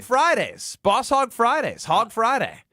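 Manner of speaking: put-on promo announcer voice. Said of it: "Ben loves doing that voice".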